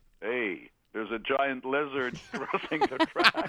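animated, swooping call-out with big swoops. Retelling what a driver said on the radio: imitating Max Verstappen's deep voice. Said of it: "he goes with his deep voice".

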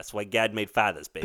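put-on Chicago accent. Co-host quotes a father character's line from the story, in Atkins's Chicago accent. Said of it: "His, like, Atkins Chicago accent".

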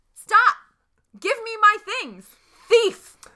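shrill high-pitched yelling. In a tabletop game, chasing someone who took their things, the player is yelling. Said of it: "And I'm yelling".

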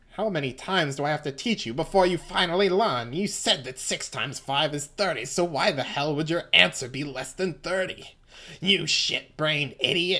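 seething, insulting, angry berating tone, held down. Reading a manga scene aloud, voicing Fugo scolding Narancia. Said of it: "I can't do this voice loud".

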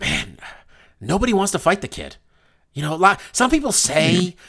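offhand, dismissive delivery with swinging, swooping pitch. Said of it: "he probably said it like this".

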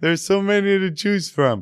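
slow, dopey voice. Voicing the excited fan inside them, a made-up character, as a Scott Slosier voice. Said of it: "Because he sounds kind of slow".

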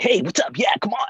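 very high-pitched, upbeat, cheerful cartoon character voice. Trying out a new voice to debut next episode: cheerful cartoonish voice. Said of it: "I'm going for this cheerful, like ... cartoonish voice".

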